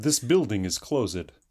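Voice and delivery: put-on Russian accent. Asked about dialects, the speaker offers his one phrase in a russian accent. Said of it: "I have one phrase for a Russian dialect".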